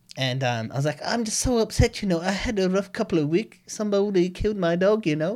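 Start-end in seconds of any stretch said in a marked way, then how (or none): 1.1-5.4 put-on high-pitched voice with Filipino accent. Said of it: "So I just started talking like that back".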